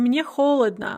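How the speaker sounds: ordinary talk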